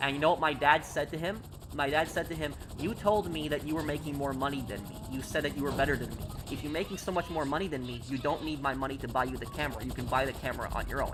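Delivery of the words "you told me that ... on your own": plain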